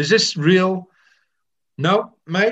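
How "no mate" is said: put-on Australian accent, much higher pitch. Retelling a man's reply about the guest, the speaker quotes him in an Australian accent. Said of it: "that was an Australian accent".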